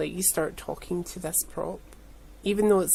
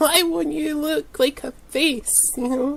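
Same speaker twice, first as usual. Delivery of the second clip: shrill, very high-pitched, loud screaming; 9 semitones higher, 6 dB louder than usual. Retelling making a prop, screaming at a polystyrene ball: imitating own screaming. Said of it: "screaming at a polystyrene ball".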